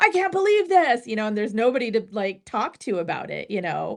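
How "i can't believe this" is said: put-on scream, higher. Retelling listening alone in the backyard: retelling own screaming.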